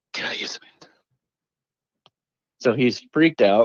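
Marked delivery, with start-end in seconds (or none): 0.1-0.9 soft, unvoiced ghostly whisper. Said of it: "touching him on the shoulder and saying".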